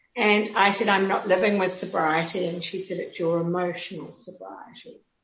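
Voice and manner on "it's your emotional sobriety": low, deep, hushed, breathy near-whisper. Retelling what a woman said when she handed over a book, deep voice. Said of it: "in this deep voice".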